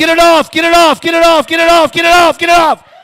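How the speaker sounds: high, loud hollering of the same words repeatedly. Retelling how the brother in the background kept yelling at the tv: imitating someone yelling. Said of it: "quit yelling at it".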